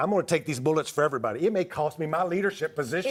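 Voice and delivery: ordinary talk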